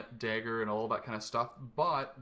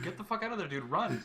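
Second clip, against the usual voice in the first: mock yelling, higher pitch; 7 semitones higher than usual. Retelling watching a stream and yelling at it: imitating own yelling.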